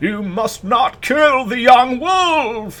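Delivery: frail, weak, very high wheezing voice, "wolf" drawn out. Game master voices a mouse speaking in a frail echo of his former tone, wheezing. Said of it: "he wheezes".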